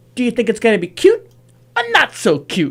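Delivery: put-on high, sing-song seven-year-old child voice. Retelling what a seven-year-old son said on stream: imitating son's little voice. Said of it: "his little voice, he's like seven years old".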